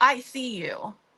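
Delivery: put-on, high, bold, confident calling-out voice. Retelling confronting a presence behind a door upstairs: retelling a yell. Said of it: "and I yelled".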